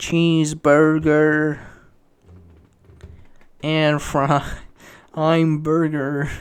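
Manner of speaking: British speaker's bad nasal American accent, slow. Reacting to a video of themselves, the speaker repeats a line: British person's bad American accent. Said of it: "a British person that's just trying to sound American".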